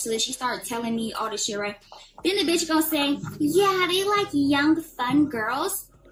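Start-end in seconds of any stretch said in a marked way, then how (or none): 3.4-5.9 put-on, slow, ditzy young woman's drawl.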